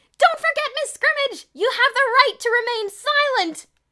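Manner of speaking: shrill, very loud calling voice. Narrator reads Kathy calling to Miss Scrimmage over the speaker, Kathy's high-pitched voice. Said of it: "Kathy's high-pitched voice came over the speaker".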